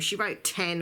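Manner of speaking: ordinary talk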